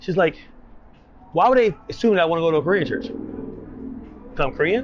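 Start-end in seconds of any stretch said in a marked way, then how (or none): 1.3-4.8 mock thrown-off, baffled, incredulous tone. Retelling how someone reacted after leaving the church: imitating someone baffled. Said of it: "she was baffled".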